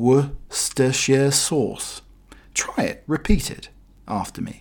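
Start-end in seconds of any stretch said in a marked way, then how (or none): 0.0-2.0 each syllable drawn out deliberately, very slow and careful. Teaching listeners how to say a tricky word: said slowly.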